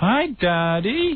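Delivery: put-on sugary, sweet, very high baby talk. Mimicking how his mother-in-law talks to the kids, imitating baby talk. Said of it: "My mother-in-law talks baby talk".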